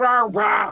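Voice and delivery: barked out sharply and loudly. Retelling a note on saying the name, barking it at an idiot. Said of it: "the biggest idiot in the world".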